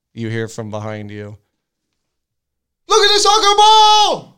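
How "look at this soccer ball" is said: piercing full-volume high shriek, "ball" drawn out. Retelling being startled from behind, imitating a loud yell. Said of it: "I'll have to back up from the mic".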